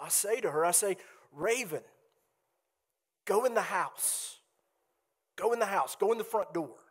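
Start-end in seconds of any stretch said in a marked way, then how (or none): 1.3-6.7 steady, firm but reassuring delivery. Retelling what they said to raven at the driveway, in a firm but reassuring tone. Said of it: "in a firm voice, but a reassuring voice".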